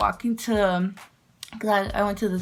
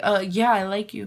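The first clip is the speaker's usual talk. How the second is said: usual speaking voice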